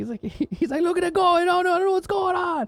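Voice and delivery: put-on Italian accent. Retelling what an italian painter said up on the job, put-on italian accent. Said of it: "He's like really Italian".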